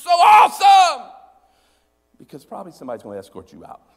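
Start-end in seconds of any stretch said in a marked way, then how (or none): 0.0-1.1 screamed at top of lungs, very high, loud. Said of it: "start screaming out".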